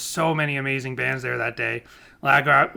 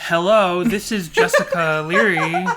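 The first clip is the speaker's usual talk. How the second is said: very slow, raised, even, level phone voice; 5 semitones higher, 5 dB louder than usual. Describing the other speaker answering calls in the car, imitating Jessica's phone voice. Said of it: "Very astute and leveled voice".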